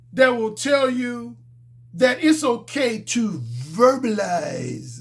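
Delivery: slow, unhurried, put-on British accent. Quoting what a man said, mimicking his british accent. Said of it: "That's how he said it in his British accent".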